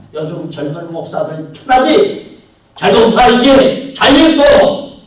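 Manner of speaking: thundering, very loud, high-pitched scolding.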